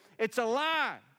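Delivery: very high, shrill, furious, angry yell. Retelling how a pastor yelled out in anger; retelling an angry yell. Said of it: "he yelled out just in anger".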